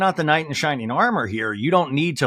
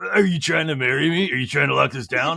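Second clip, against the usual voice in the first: put-on voice, belching and half-yawning. Retelling what Paige said at dinner: imitating Paige's belching half-yawn voice. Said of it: "it sounded like she was belching when she said it".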